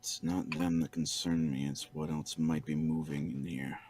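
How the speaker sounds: extremely hushed stage whisper. A character half-whispers back to a companion, half-whispering as quietly as possible. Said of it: "Rissel's gonna whisper back as quietly as possible".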